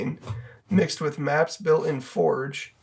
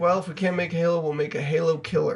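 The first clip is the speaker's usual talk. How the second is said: normal talking voice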